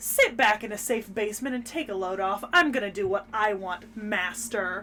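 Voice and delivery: ordinary delivery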